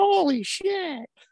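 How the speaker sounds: put-on very high small-child voice. Retelling a kid recognising him in the crowd, doing a little kid voice. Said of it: "this little kid voice".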